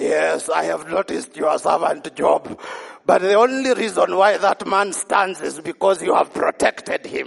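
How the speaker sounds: voice dropped very low, rasping and accusatory. Retelling the devil's reply to God about his servant Job, in a devil voice. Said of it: "Did I sound like the devil?".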